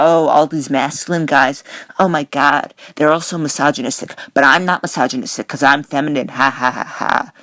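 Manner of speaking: condescending, smarmy, smug sneer with fake laugh. Mocking a commentator's smug take on masculine guys: mocking smarmy smug voice. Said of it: "he's saying this in such a smarmy, smug way".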